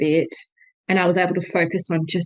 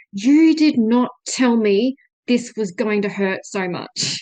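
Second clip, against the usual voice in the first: mock angry, slow, each word weighed; 4 semitones higher, 3 dB louder than usual. Retelling what was said to the midwife during pushing: retelling an angry remark. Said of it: "angrily saying to my midwife".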